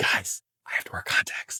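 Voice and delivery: hushed, breathy, barely voiced whisper. Recounting what the speaker told everyone on the first filming day, whispering. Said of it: "I don't know why I'm whispering".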